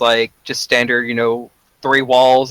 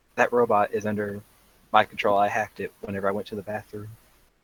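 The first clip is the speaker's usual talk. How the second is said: soft, hushed, secretive half-whisper aside; 3 semitones lower, 9 dB quieter than usual. Telling the group in character about a hacked robot: half-whispering. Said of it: "I'm whispering this to everybody".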